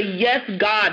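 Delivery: ordinary talk, nothing marked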